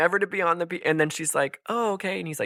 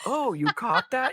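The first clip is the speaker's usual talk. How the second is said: acted caught-off-guard surprise, pitched up; 6 semitones higher than usual. Retelling a scene, imitating Jacob sounding surprised. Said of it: "he literally says it so surprised".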